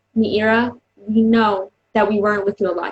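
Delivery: ordinary talk, nothing marked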